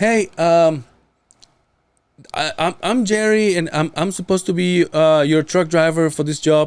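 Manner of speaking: voice lifted way up in pitch. Retelling a call from a truck driver saying the speaker's name: high-pitched voice. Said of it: "have the high voice?".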